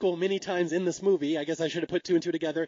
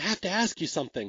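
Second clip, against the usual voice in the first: put-on nervous man voice; 2 semitones lower, 3 dB quieter than usual. Retelling a movie scene where he asks her something: imitating a nervous man. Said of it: "he's so nervous".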